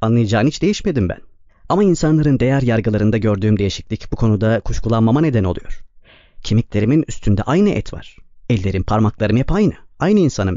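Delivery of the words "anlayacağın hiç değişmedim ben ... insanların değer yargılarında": usual speaking voice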